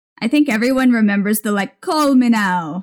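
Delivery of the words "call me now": put-on Caribbean accent. Recalling the psychic hotline commercials: Miss Cleo impression. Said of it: "I'm just doing a Miss Cleo".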